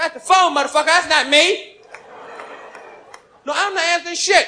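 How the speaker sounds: put-on, high-pitched drunken dad ranting voice. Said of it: "My pop's home like this, drunk".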